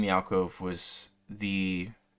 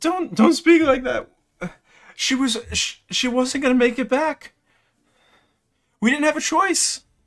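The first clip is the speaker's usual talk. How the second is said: weeping, sobbing voice, very high and very loud; 11 dB louder than usual. Narrating a scene, the speaker voices an unseen woman: sobbing woman's voice. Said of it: "a female voice uh, sobbing".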